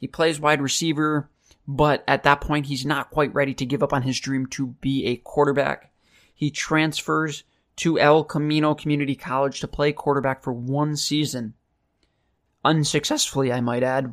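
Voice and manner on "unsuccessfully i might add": voice cracking and breaking. Telling a player's story, voice cracking. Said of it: "my voice just cracked".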